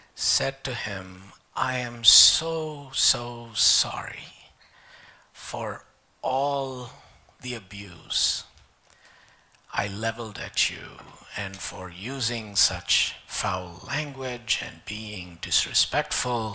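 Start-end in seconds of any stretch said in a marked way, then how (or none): 1.6-16.6 meek apologetic voice, quieter. Telling a joke, voicing the parrot's apology: very humble voice. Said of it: "in the most humble voice".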